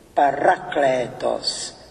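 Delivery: parakletos, stress on ra, lengthened kle. Showing how a Greek term should be pronounced: stress on 'ra' of parakletos. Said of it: "já dávám důraz na druhou slabiku a délku na třetí slabiku".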